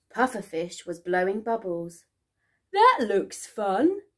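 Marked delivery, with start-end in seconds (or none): 2.8-4.0 said through a laugh. A shark watches a fish blowing bubbles, laughing. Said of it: "laughed Smiley Shark".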